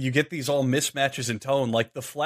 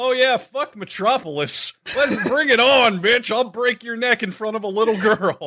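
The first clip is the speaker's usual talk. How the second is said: loud, very high, belted mocking bravado; 9 semitones higher, 5 dB louder than usual. Mocking how the movie's Superman acts: mocking imitation of movie Superman.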